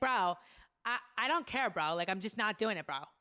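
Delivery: put-on loud, high-pitched girl voice. Describing a girl's iconic way of talking, then imitating it: Gianna impression. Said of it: "I do live impressions all day backstage".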